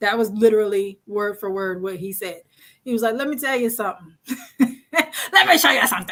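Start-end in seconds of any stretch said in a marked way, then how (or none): 3.1-6.1 all-out silly, playful, comic delivery. Imitating a parent who would go full on Jim Carrey: imitating dad doing Jim Carrey. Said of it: "he would go full on Jim Carrey".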